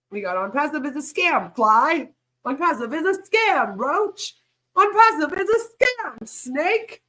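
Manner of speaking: goofy, high, slow cartoon kid voice. Speaker doing a quick bit, in a South Park voice. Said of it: "I said that like South Park".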